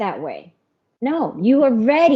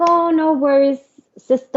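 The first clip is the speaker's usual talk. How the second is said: put-on Korean accent, pitched up; 5 semitones higher than usual. Quoting her Korean group leader's reply, in a mocking Korean accent. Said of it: "I'm making fun of her accent again".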